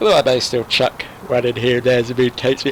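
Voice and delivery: talking through a yawn, words stretched.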